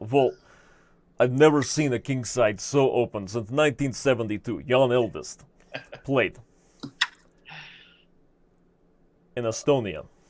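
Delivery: put-on Russian accent, disgusted tone. Asked to play a Russian chess coach disgusted by a move, speaking in a Russian accent. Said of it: "can you please talk with a Russian accent?".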